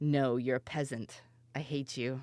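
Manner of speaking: put-on grumpy cat voice. Describing how the cat Ashara treats the dog: voicing Ashara the cat. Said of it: "And then she's like".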